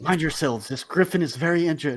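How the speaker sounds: loud stage whisper. Playing a character in a roleplay scene, turning her head to the others, in a loud whisper. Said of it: "she kind of whispers loudly".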